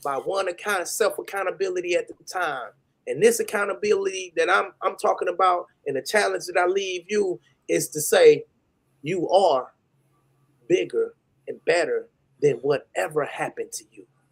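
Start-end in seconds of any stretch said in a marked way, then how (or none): 3.1-14.0 choked-up, emotional pleading tone, close to tears. Challenging the listeners to self-accountability: emotional, close to tears. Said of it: "I got a little emotional".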